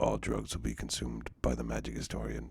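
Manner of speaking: very low, quiet mutter under the breath. Joking about a promise to buy drugs: mock under-breath aside. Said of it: "how do I do the quiet under my breath exclamation".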